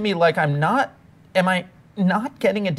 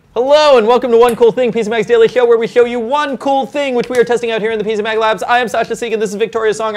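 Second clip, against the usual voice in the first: very fast, rapid-fire words rattled off at breakneck speed; 4 semitones higher, 8 dB louder than usual. Opening a tech video, introducing yourself and your co-host, talking very fast. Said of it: "I'm talking very fast".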